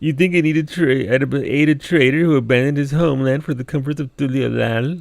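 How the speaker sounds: high, whiny, put-upon complaining tone. Player repeating a game character's line back at it, mock-whiny voice. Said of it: "He gets the whiny voice".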